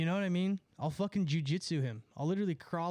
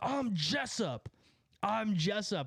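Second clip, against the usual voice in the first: play-acted slow, drawn-out, repeated mild yelling; 3 semitones higher than usual. Retelling how a driver shouted from a car window: imitating a man yelling. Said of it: "He kept yelling".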